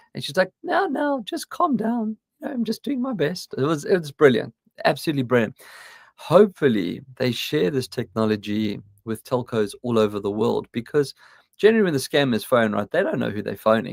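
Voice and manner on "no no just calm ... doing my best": put-on very high, posh old lady voice. Describing an AI granny frustrating phone scammers: posh O2 Granny AI voice. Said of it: "She's got this lovely posh voice".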